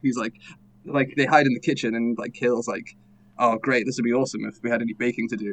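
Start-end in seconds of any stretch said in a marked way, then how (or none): 3.4-5.4 put-on sarcastic voice, lower and quieter. Retelling a movie character's line in the kitchen, imitating sarcastic delivery. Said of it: "sarcastic as fuck".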